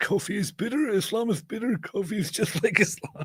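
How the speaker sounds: very high, raspy, preaching voice. On a live stream, voicing a message in a raspy dawa voice. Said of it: "doing a raspy dawa voice".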